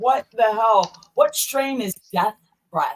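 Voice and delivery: ordinary talk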